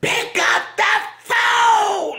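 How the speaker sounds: very high, shrill, frantic lost-it hollering. Retelling how someone yells for Larry to come to the phone, imitating a frantic yell. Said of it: "lose your whole mind over it".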